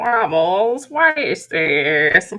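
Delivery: pretend scolding voice of a weird grandmother. Imagining annoyed viewers scolding wobbles, mock-scolding like a weird grandmother. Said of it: "Scolding you, kind of like a weird grandmother".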